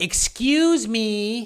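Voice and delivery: really obnoxious, high-pitched delivery. Retelling brushing past someone through a door, a mock-obnoxious 'excuse me'. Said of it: "And I just like really obnoxiously".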